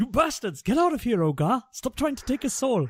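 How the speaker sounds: poor, fake Nigerian accent, shouted. A player's character drives off the Dementors, in a poor put-on accent. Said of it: "Poor accent".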